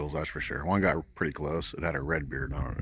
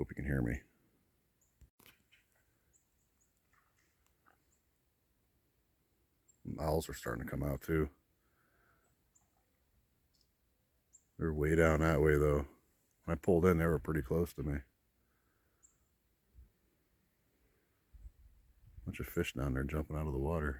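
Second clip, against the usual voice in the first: quiet, hushed, soft-spoken voice; 3 dB quieter than usual. Not wanting to disturb people fishing nearby, the speaker talks quietly. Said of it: "I'm talking quietly because there's people fishing".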